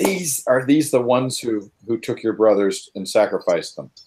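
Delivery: half-whispered aside in a character voice. Speaking in character to a companion before a fight: half-whispering in character. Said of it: "I'm gonna whisper to Fenn".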